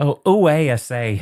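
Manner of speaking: put-on British accent. Answering a request to say hello to British listeners: put-on British accent. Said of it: "Can you say hello to the British folks?".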